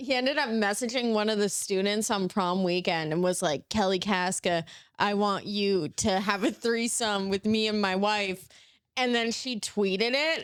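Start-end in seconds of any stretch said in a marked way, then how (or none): none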